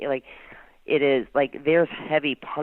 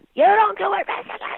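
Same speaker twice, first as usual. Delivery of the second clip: put-on scream, higher and louder; 6 dB louder than usual. Retelling how a man banged the desk and was screaming: imitating someone screaming. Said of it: "screaming and carrying on".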